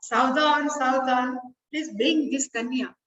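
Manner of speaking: usual speaking voice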